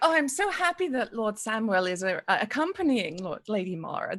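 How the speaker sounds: heavily exaggerated, over-the-top overplayed politeness. Voicing Miria greeting the lords: laying it on real thick. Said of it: "she's laying it on real thick".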